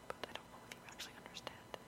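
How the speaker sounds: very soft, fast, half-swallowed, unintelligible whisper.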